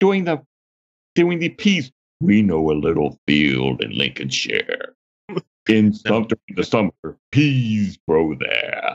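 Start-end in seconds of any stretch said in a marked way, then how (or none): 2.2-9.0 very low commercial ad-style voiceover. Comparing a preacher's delivery to a commercial outtake: Orson Welles voice. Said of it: "This sounds like Orson Welles doing the".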